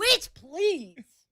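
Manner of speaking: extra enthusiastic delivery. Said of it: "one more time".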